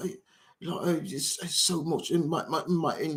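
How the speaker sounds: soft, light put-on Cockney accent. Describing how accents differ, imitating someone with a Cockney accent. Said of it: "somebody who's got more of a Cockney accent. He'd be like".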